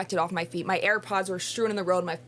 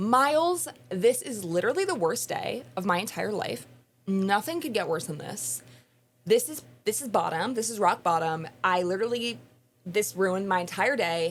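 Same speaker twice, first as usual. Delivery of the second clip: ordinary delivery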